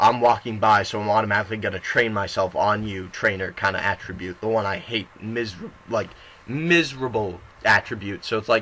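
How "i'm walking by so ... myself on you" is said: ordinary talk, nothing marked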